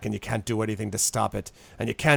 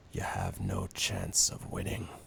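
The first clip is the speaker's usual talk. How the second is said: very low, very quiet, hushed murmur; 10 semitones lower, 10 dB quieter than usual. In a story, a man leans forward to tell the last bit of information, lowered voice. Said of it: "he kind of lowers his voice and he says".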